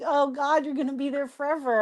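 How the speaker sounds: put-on soft words broken up by laughter. Retelling their own reaction during a phone call; retelling own laughing while talking. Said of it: "I'm laughing like".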